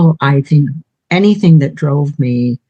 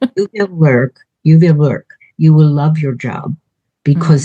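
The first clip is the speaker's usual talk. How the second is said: put-on Hungarian accent. Quoting the Hungarian woman the speaker lived with, imitating Hungarian accent. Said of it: "I'll use her accent".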